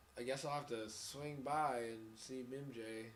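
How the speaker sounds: flat, lifeless, passionless voice-acting line reading. Repeating the game line, imitating Tobey Maguire's passionless voice acting. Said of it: "He's like".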